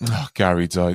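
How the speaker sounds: mock casual, flat, matter-of-fact, offhand tone. Quoting a remembered remark of hers, imitating someone flatly offhand. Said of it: "she said it as if like her team had lost or the bins didn't get taken".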